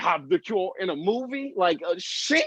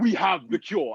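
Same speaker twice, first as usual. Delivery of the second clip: put-on Nigerian accent; 3 semitones lower than usual. Imitating a doctor from Nigeria announcing a cure: imitating a Nigerian accent. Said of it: "not that accent".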